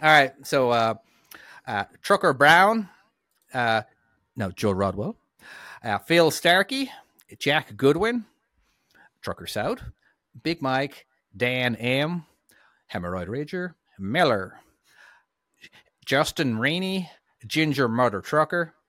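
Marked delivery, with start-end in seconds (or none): 2.0-18.7 put-on American accent. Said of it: "Do your American accent".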